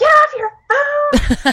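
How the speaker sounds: acted, very high, shrill, furious swooping yell. Acting out a near miss in the car: imitating yelling at a driver. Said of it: "I'm yelling".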